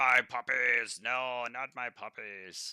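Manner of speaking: very big, giant-sized ogre voice. Narrating the game, an unseen ogre cries out, very big ogre voice. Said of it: "you hear a very big voice in common say".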